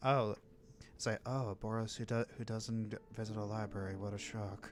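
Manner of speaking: muttered under the breath. Voicing a character's remark that only Cicero hears, muttered under her breath. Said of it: "you hear under her breath".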